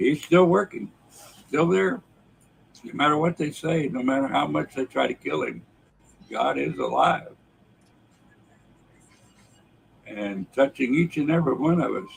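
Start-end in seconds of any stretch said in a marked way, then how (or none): 2.8-12.1 choked-up, emotional voice. Speaker tells of a miracle this week: choked up. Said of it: "I don't know why I'm choked up today".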